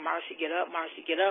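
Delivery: ordinary delivery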